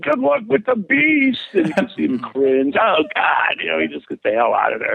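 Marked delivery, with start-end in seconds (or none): 0.0-1.4 very high, rough, rasping yell. Retelling yelling at a wrestler outside church, retelling a yell. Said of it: "and I'm yelling".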